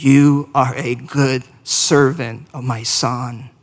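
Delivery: slow, low, gentle and loving voice. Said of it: "hear your gentle and loving voice".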